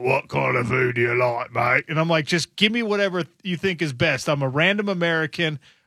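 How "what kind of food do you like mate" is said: put-on, low, gravelly voice. Retelling a very tall man asking what food they like: imitating a gravelly voice. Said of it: "he has the graveliest voice".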